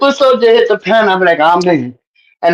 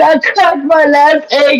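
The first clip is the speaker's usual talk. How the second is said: mock crying, higher pitch; 4 semitones higher than usual. Retelling a friend crying on the panel: imitating someone crying. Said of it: "you be crying".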